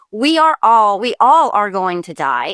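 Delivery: ordinary talk, nothing marked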